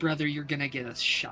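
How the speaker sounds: hushed stage whisper. Half-whispering in character to a fellow player at the bar: half-whispering. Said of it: "I'm just gonna whisper".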